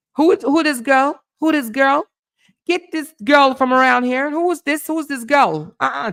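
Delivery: very high, loud put-on Caribbean mama accent. Acting out a Caribbean mama meeting her son's girl, in a put-on Caribbean mama accent. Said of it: "I'm trying to get my Caribbean accent on".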